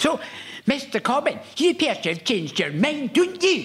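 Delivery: put-on Scottish accent, pitched very high. Retelling what a woman asked him, in a scottish accent. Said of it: "you totally nailed that Scottish accent".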